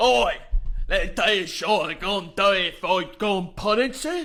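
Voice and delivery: mock British hooligan voice. Imitating soccer hooligans coming up to people: imitating soccer hooligan uk accent. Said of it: "they'll come up and be like".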